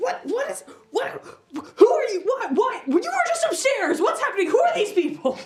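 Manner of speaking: frantic, very high, panicked screaming. Voicing a startled character who was just tackled: screaming and panicking. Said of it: "screaming and, like, panicking".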